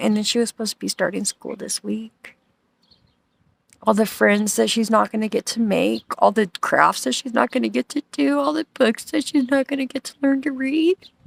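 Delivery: tearful voice, fighting off crying, holding back tears. Speaker tells viewers about a missing little girl, holding back tears. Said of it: "I'm trying not to cry".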